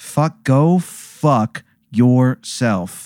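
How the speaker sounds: very slow, dragged-out, drawn-out delivery.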